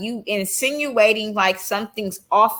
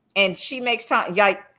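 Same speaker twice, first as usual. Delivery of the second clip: usual speaking voice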